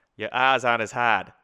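loud put-on Australian accent with soft r's. Repeating a remark about R's to show how it sounds: Australian accent. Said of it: "as in an Australian accent, it's really funny because it becomes".

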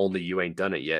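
ordinary delivery

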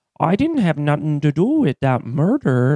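put-on rural Minnesota farm-country accent. Mimicking how locals in a small Minnesota town talk: small-town Minnesota accent. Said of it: "where they all talk like this".

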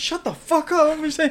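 acted, very high, shrill, pissed-off angry tirade. Retelling a commercial where the barber snaps at a customer: imitating an angry barber. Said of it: "The fucking barber's getting all pissed".

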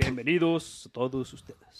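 1980s-style radio announcer voice. Opening a bit analyzing TikToks, 80s radio announcer voice. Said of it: "Entonces lo haremos como de los 80s".

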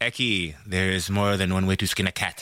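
poor, put-on South African accent. Recalling his South African rugby coach, speaker quotes him: bad South African accent. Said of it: "And I think that was a bad accent".

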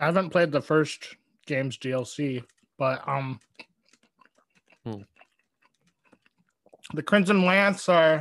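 talking with mouth full. Explaining game lore to the other speaker while eating, talking with mouth full. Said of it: "I'm talking with my mouth full".

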